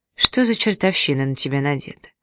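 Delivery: plain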